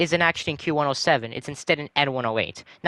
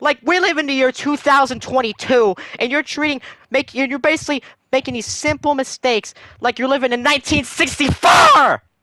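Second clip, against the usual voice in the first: high-pitched, very loud, shrill screaming rant; 9 semitones higher, 4 dB louder than usual. Ranting about errors on their school schedule, screaming very loud. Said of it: "I'm sorry for screaming so god dang loud".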